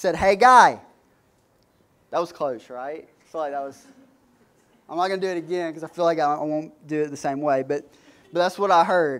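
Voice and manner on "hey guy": put-on hard, thick Jersey accent, very loud. Retelling what a woman said to the speaker, in a thick Jersey accent. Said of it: "like Jersey accent".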